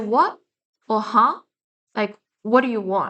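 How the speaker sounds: mock sarcastic, sharp tone. Describing how they answer people who annoy them, acting it out: acting out a sarcastic reply. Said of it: "I tend to have a sarcastic demeanor".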